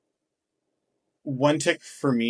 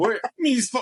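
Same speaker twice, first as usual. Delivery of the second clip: high, loud, hammed-up mock leprechaun accent. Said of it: "Sound like a fucking leprechaun".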